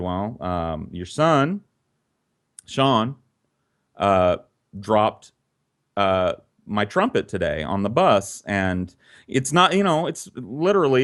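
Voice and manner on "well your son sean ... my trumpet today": usual speaking voice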